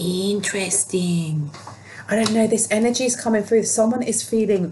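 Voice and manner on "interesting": put-on cartoon character voice. Saying the single word interesting, in Ren voice. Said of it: "I feel like saying interesting with this, with the voice of Ren from Ren and Stimpy".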